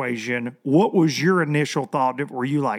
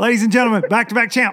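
mock cheesy radio DJ announcer, much higher; 7 semitones higher, 4 dB louder than usual. Showing off a new mixer, the speaker does a crappy radio DJ voice. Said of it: "I'm a crappy radio DJ now".

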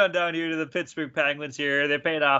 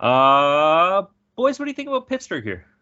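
ordinary talk

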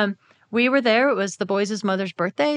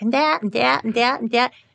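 put-on nine-year-old child's voice; 4 semitones higher than usual. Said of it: "I was also talking like a nine-year-old".

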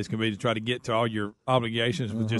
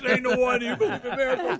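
put-on scream, higher; 12 semitones higher than usual. Retelling how a game caller announced the sixteenth goal: imitating a screamed goal call. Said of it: "when he screamed out".

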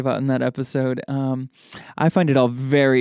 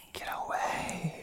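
breathy, ghostly whisper right up close. Imitating a ghost heard on a recording: imitating a ghost's whisper. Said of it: "he's, like, whispering right in my ear".

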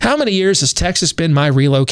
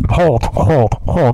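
mumbling, muffled sound; 2 semitones lower than usual. Showing how saying hold through a double mask sounds: muffled as if through a double mask. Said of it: "It would sound like that. Double masked".

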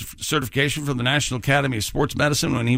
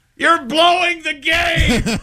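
very high-pitched, shrill screaming voice; 4 dB louder than usual. Retelling what one parent screamed during a kids' game, retelling a parent's scream.

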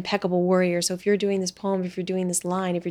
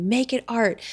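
put-on, demanding, screaming cry; 4 semitones higher than usual. Retelling how the old acting teacher screamed at students: imitating Susan Batson screaming. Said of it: "she'd just jump out and scream at you".

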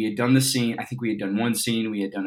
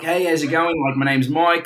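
casual, raised, put-on Australian accent, kept up; 7 semitones higher, 6 dB louder than usual. Recalling how the speaker talked the whole time before revealing Colorado roots, put-on Australian accent. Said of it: "the whole time I've been like".

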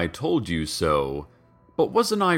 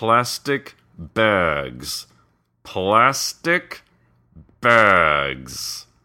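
whispered hiss through gritted teeth, much slower; 3 dB louder than usual. Narrator reading the mayor's reply to journalists, whispered through gritted teeth. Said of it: "whispered through gritted teeth".

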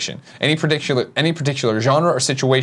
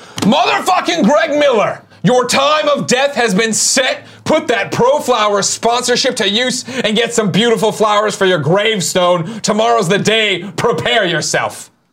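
put-on yell, high and slow, every word stressed; 9 semitones higher, 3 dB louder than usual. Reading aloud a message written all in caps: put-on shouting. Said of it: "This is all in caps, so I'll read it that way".

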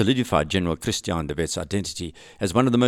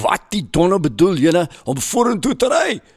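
furious, angry yelling; 9 semitones higher, 5 dB louder than usual. Telling a war story, the speaker gives the rider's Afrikaans shout: retelling a furious yell. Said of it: "he yelled this in Afrikaans".

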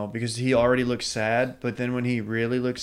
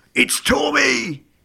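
very high-pitched, very loud yell; 13 semitones higher, 6 dB louder than usual. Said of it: "yelling his name in, uh, Peaky Blinders voice".

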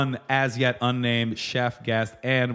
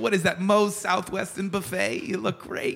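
put-on old person voice; 8 semitones higher than usual.

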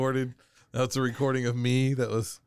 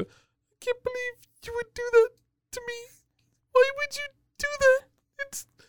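very high voice, choking back tears. Showing the voice people love, holding back tears voice. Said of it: "you're holding back from trying to cry".

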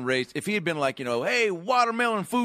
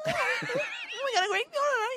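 put-on slurred, higher talk-show host voice; 3 dB quieter than usual. Imitating a talk-show host having a stroke: Jay Leno having a stroke. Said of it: "His voice just goes on".

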